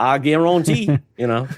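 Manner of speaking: put-on Cajun accent. Joking along after a chat comment about a Cajun accent: Cajun accent. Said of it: "you don't want me to start doing mine".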